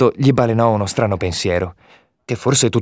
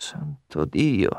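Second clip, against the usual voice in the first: desperate, despairing mutter, very low and hushed; 7 semitones lower, 8 dB quieter than usual. A man, suddenly horrified at how he hid the things, muttering in despair. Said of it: "mormorava disperato".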